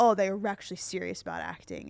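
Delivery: plain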